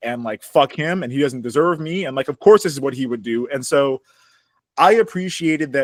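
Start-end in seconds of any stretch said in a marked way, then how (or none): none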